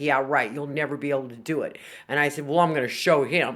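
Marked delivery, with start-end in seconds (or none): 0.0-1.8 mock sardonic, doubtful tone. Quoting a man who doubted the speaker could get down to two milligrams, mock-sardonic. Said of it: "he said it in a very sardonic way".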